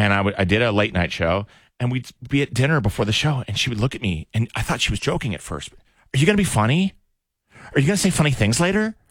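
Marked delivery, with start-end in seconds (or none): 5.7-8.9 high voice as to a puppy. Retelling how a date spoke to him: imitating talking to a puppy. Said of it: "the way you talk to a puppy".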